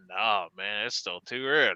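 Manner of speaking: very low, soft, put-on Cajun accent. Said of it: "in his Cajun accent".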